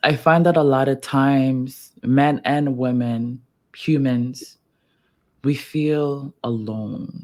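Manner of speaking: voice full of emotion, drawn out. In a conversation, talking about people feeling alone, getting emotional. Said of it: "for some reason I'm getting emotional".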